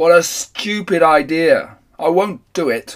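very slow, loud, booming bellow. Thor answers the other gods' plan, roaring. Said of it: "roared Thor".

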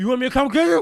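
put-on drunken slurring. Retelling a phone call while drunk in a basement: imitating own drunken slurring. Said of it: "I'm slurring at this point".

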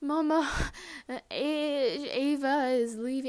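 very slow, sobbing, stammering, broken words. Retelling telling mom the news after running home: imitating own sobbing speech. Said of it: "I could not say".

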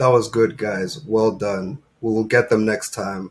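put-on monotone delivery. Imitating the manager's same team talk every day: imitating a monotone manager. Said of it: "the voice was just monotone the whole time".

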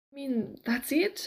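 shocked, dismayed, appalled tone. Hearing that this is where the story stops, he asks, appalled. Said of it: "Inigo said, appalled".

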